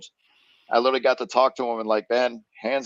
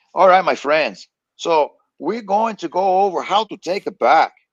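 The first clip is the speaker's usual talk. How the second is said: fake Brazilian accent, loud and high; 7 semitones higher, 7 dB louder than usual. Retelling how a guy from Texas talked in class, fake Brazilian accent. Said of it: "he's got the fake Brazilian accent".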